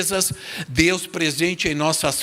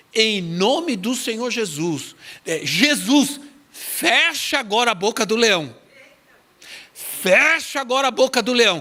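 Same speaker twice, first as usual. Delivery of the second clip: mild, urgent, commanding put-on shout; 6 semitones higher than usual. Retelling how a woman shouted a prayer at attacking dogs: imitating someone shouting. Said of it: "ela gritou".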